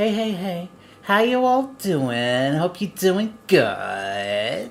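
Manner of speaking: whiny, slow sing-song drawl, stretched out long. Taking a go at imitating Carrie: imitating Carrie's whiny voice. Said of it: "oh, I got it".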